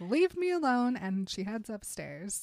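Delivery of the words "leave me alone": high, loud screaming. Retelling a story scene where she screams back at the chief: retelling a scream. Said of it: "she screams back".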